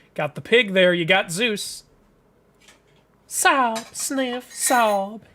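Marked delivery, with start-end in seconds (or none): 3.3-5.1 sniffling sobs in a Southern accent. Voicing a character in a story who cries, sobbing in a southern accent. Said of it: "Southern people even cry in Southern accents".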